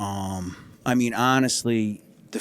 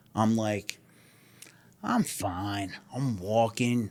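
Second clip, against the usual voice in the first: normal talking voice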